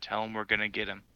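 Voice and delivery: quiet, whispered voice. In a roleplay, a character leans in to another's ear, whispering. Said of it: "John will just whisper in his ear".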